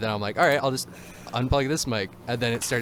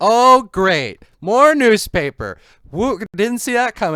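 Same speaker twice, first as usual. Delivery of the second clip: very high, very loud, shrill sarcastic whoop; 11 semitones higher, 13 dB louder than usual. Recalling standing up in class as a student, retelling own sarcasm. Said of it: "I got really sarcastic".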